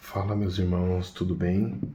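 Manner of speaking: soft, low, hushed, under-the-breath. Greeting viewers to record a video after the kids fell asleep, speaking softly. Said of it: "tô falando baixinho porque agora as crianças já dormiram".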